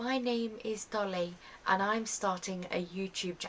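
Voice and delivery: nervous, stiff, robot-like voice. Retelling a first video's opening line: imitating own robotic stiff delivery. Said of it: "I was very robot".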